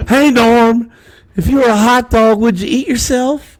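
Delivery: very high, loud caricature voice. Doing the remembered bit the older doctor resembled: Will Ferrell's Harry Caray impression. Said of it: "Will Ferrell's impersonation of Harry Carey".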